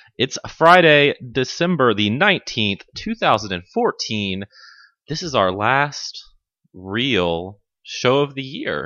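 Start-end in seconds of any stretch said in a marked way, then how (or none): 5.1-8.9 heavy, slow sarcasm with real stretched and stressed. Announcing the last real show of the year, sarcastic, with air quotes. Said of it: "You say that with quotes and such sarcasm".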